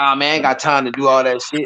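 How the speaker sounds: ordinary talk, nothing marked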